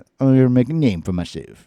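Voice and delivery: broad, thick Cajun accent, laid on. Reading a listener's letter on the show, in a thick Cajun accent. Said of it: "that's my thick Cajun".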